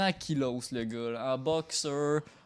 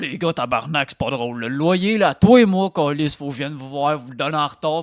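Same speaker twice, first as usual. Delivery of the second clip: heavy, big, gruff voice at full volume; 12 dB louder than usual. Telling a story, voicing someone opening the apartment door, big gruff voice. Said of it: "une grosse voix faire là".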